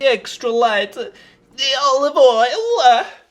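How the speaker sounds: exaggerated put-on Italian accent, very loud and high. While cooking crackers in a pan, the speaker names the olive oil in a put-on Italian accent. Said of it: "That's my Italian accent".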